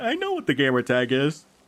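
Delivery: talking through a yawn. Telling a story about an encounter in a game, yawning mid-sentence. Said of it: "Sorry, I'm yawning".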